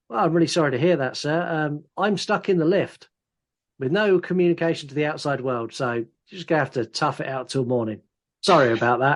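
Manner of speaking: ordinary talk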